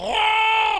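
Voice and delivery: very high, loud wailing yell with a gurgle. Narrating a game scene, acting out a creature's yell: imitating a gurgling wailing yell. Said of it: "You've never heard anybody yell like that".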